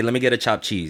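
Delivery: rolled-together words. Showing friends how to order at the deli, words rolled together. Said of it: "You gotta say it like this".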